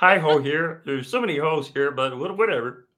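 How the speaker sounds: high-pitched, put-on cartoon frog puppet voice. Asked to do a dirty Kermit, doing a Kermit voice. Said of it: "I can do Kermit".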